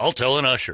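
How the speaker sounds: ordinary talk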